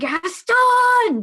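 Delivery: very loud, very high, drawn-out booming shout. Taking a speech action in the game by yelling a name: yelling. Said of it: "I'm yelling".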